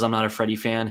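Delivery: plain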